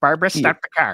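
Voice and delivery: put-on thick Midwestern accent. Imitating a movie character, thick Midwestern accent. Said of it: "this really thick Midwestern accent".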